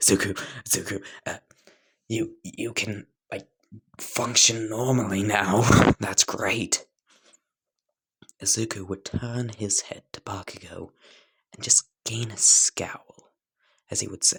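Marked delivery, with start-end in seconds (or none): 0.0-6.9 thrilled, eager, very excited gushing. Telling a story where Bakugo sees Izuku sitting by a window, Bakugo very excited. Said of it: "Bakugo would be very excited".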